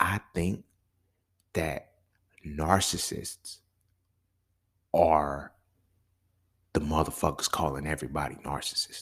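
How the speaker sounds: hushed, soft, low-key confiding whisper. Sharing a low-key opinion, whispering. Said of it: "this is why I'm whispering".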